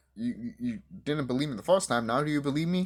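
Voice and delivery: ordinary talk, nothing marked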